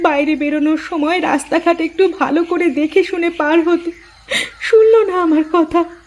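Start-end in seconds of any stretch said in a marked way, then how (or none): 4.7-5.8 high, sobbing, lamenting cry. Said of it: "বেশি কান্নাকাটি করবার দরকার নেই".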